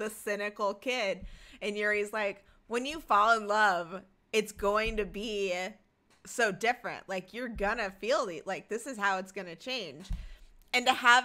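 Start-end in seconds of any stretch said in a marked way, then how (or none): none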